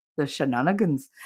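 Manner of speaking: put-on Irish accent. Retelling saying a word aloud the way another person says it: imitating Broken Baker's accent. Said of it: "I just made it Irish when he's Danish".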